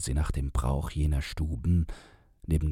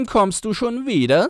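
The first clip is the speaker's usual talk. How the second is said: shrill, very high, very loud, jeering sneer; 8 dB louder than usual. A voice mocks the narrator as the door opens: shrill mocking. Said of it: "höhnte grell und auf Deutsch die Stimme neben mir".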